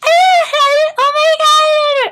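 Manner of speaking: very high, shrill, very loud gushing chatter, "my" stretched. Retelling why the speaker couldn't sleep while she was on the phone, imitating her phone voice. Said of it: "she talked like that".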